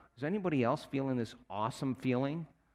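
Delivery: ordinary delivery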